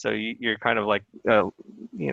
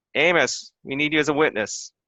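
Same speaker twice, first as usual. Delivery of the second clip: raised, pitched-up calling out; 5 semitones higher than usual. A storyteller voices a man calling for a witness from the back: shouting to the back room. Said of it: "he kind of shouts in the back".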